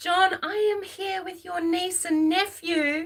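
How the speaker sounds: put-on high, loud screamed call. Retelling how a woman woke the household, imitating someone screaming. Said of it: "she's screaming".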